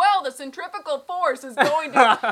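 very loud, high, lecture-style shouting. Retelling what a person said as the ride got intense: imitating someone shouting. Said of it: "so he was shouting".

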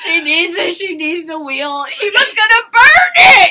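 loud, sobbing cry.

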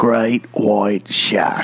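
attempted put-on Australian accent. Repeating a phrase to show off an attempted Australian accent.

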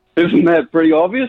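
loud, fake, put-on British accent. Caller claiming to be from London answers the host's question in a British accent. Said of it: "Your accent is 10 out of 10 British".

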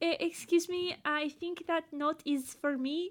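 terrible put-on French accent. Imitating a woman who does a terrible French accent: bad French accent impression. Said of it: "That's my impression of her French accent".

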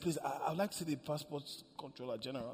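mock-humble, low-voiced humble asking. Retelling speaking to the first man seen inside; retelling a humble low-voiced request. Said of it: "you're very humble when you're asking for things".

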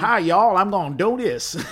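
loud, high-pitched, belted Texas drawl. Imitate an actor who only did cowboy parts and played himself, in a Slim Pickens Texas drawl. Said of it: "this Texas drawl".

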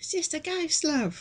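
played-up camp Cockney voice. Quoting a film character's line: imitating a camp Cockney accent. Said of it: "bit of a Camp Cockney thing going on".

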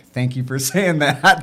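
speaking through laughter.

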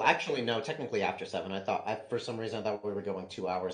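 ordinary delivery, nothing marked

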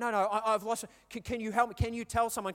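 put-on frantic, stumbling delivery. Retelling a dad who lost his two-year-old asking for help: imitating a frantic dad. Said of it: "and he's frantic".

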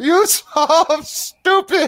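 words bubbling out through laughter, very high pitch. Game master voicing Rira, who laughs at the player's character: laughing while talking. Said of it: "and he begins laughing".

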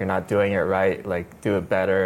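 ordinary talk

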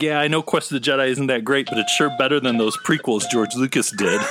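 usual speaking voice

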